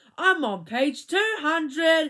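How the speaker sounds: high, loud, shouted yelling voice. Reading Joy's reply to Todd after she pulls his hair; shouting. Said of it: "Joy shouted".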